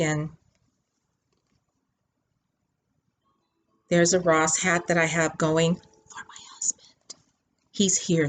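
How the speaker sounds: hushed whisper. Showing her knitting project while her husband is in the room; whispering. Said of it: "that's why I'm whispering".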